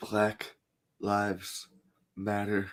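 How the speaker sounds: very quiet, hushed, overly dramatic theatrical delivery. Giving someone a better soundbite, said the dramatic way, dramatic delivery. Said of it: "You got to say it in that dramatic".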